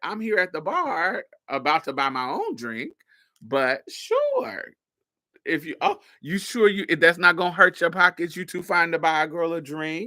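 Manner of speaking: sarcastic, swooping sing-song delivery. Retelling her reply when a man offered to buy a drink: retelling own sarcastic reply. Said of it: "I'm being sarcastic".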